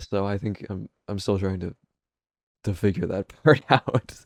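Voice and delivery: laughing through words. Reflecting aloud after apologizing for being dark, laughing while talking. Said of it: "I don't know why I'm laughing".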